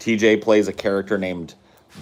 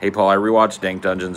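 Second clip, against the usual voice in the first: ordinary talk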